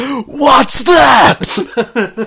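sudden shout, very high. Recounting a scene where a gift is left for Roy, imitating someone shouting. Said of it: "He just shouts".

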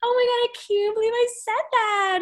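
mock giggling, very high giggly schoolgirl gush. Retelling a reaction to a slip: imitating Chrishell giggling like a schoolgirl. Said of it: "giggling like a little schoolgirl".

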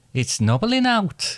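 very high, put-on Welsh accent. Trying out accents in turn, a speaker switches to Welsh: Welsh accent. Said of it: "I'm going on to now Welsh".

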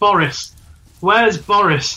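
stiff, stilted, wooden, flat delivery. A player's character walks into the archive and calls out, woodenly shouting. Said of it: "sort of woodenly shout".

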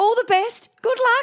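very high, shrill, loud acted-out shout. Telling how a man shouted as the narrator ran down the hospital hallway, retelling a shout.

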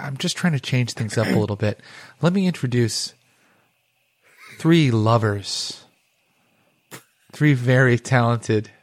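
smooth, mellow, dulcet soft-rock radio host tone. Host introducing the guests on the show: The Fog's late-night DJ voice. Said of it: "talks like this the whole time".

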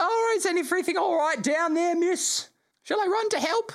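put-on very high boyish halfling voice. Narrator voicing a third voice heard through an upstairs door, boyish halfling voice. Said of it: "sort of boyish, you recognize maybe kind of halfling in cadence".

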